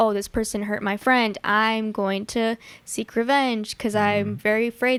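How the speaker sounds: ordinary delivery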